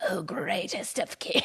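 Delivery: eerie, otherworldly, spooky demon voice. Retelling a scene where a letter is read aloud, in a spooky demonic voice. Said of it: "out of her mouth comes a spooky voice".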